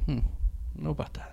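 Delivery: whispered, breathy, puzzled, doubtful, hesitant murmur. Retelling a wife's reaction to older crushes: imitating a confused wife. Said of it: "my wife was very confused".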